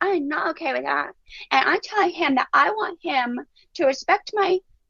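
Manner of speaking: put-on tiny toddler voice, high and slow. Retelling a toddler practicing a talk about her toy: imitating a little three-year-old's voice. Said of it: "all in this little three-year-old voice".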